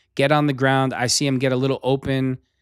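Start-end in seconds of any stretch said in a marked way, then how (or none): none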